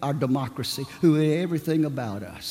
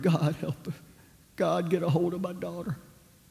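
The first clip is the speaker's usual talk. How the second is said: put-on muttering under breath, higher and quieter; 4 semitones higher, 4 dB quieter than usual. Retelling a father's prayer in a silent church: imitating someone muttering under breath. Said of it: "under his breath muttering".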